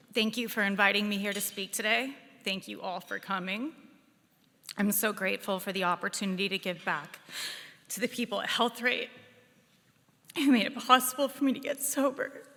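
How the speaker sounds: choked up with tears while speaking. Opening a speech thanking those who helped her get sober: crying while speaking. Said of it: "I'm like already crying".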